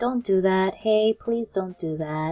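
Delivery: soft, gentle, mild, not stern or harsh. Contrasting a stern warning with a milder version of it, soft, not stern. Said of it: "It's different from".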